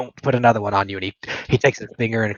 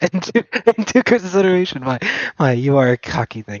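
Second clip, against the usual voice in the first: hearty laughter while talking, higher pitch; 6 semitones higher, 3 dB louder than usual. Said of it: "Lets out a hearty laugh".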